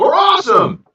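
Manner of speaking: very high, loud holler. Playing a character who answers her remark by yelling across the room. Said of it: "he'll just yell".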